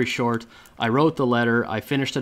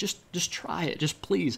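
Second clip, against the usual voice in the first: mock imploring, begging, pleading voice; 6 semitones higher, 8 dB quieter than usual. Retelling asking the boss to test the sales letter: retelling own begging plea. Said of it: "I'm begging".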